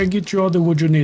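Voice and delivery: put-on poor Latin accent with broken English. Voicing the tamed beaver answering the request for wood, very poor Latin accent. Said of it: "speaks with a very poor Latin accent".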